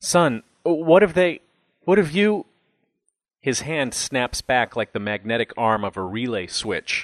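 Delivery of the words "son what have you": trembling, quavering, raised, pitched-up voice. A father reaching down to his son in the dark speaks, voice quavering. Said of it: "his voice quavering".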